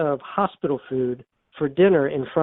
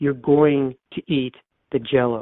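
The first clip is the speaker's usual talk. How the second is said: mock steadier, firmer, more forceful voice. Retelling what she says to Hyman about eating the Jello, retelling a stronger voice. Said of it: "in a little stronger voice".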